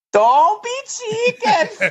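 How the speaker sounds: extremely high-pitched yell. Performing a requested line, a wife yelling down a well: imitating the wife yelling down the well. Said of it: "can I get you to do that for me".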